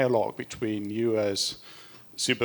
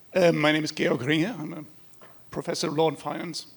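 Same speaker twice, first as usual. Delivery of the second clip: cracking voice, much higher pitch; 6 semitones higher than usual. An audience member introduces himself during a panel Q&A, voice cracking. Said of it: "Sorry, my voice is cracking".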